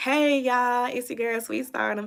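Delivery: smooth, polished delivery. Retelling how she thinks she sounds on voice recordings, in a smooth voice. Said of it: "I think I be sounding so smooth".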